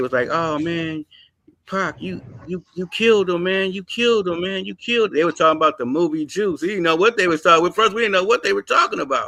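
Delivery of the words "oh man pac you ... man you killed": put-on crying child voice, higher. Retelling how kids walked up crying to pac: imitating crying kids. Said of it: "and they were crying".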